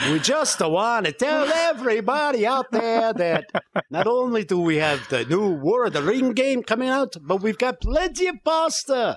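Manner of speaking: put-on Polish accent. Speaker does a mock announcement, attempting a Polish accent. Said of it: "I was trying to do Polish".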